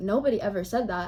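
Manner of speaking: plain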